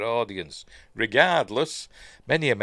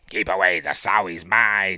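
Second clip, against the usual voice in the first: demonic possessed voice; 6 dB louder than usual. Retelling a film scene after she sends a doctor flying, in demonic voice. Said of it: "in demonic voice".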